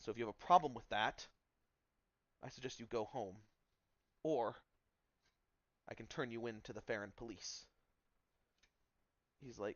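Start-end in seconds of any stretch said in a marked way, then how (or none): 0.0-7.7 stern, strained voice. A man addresses someone unhappy with the changes; stern, strained voice. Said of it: "this sternness in his voice that sounds very strained".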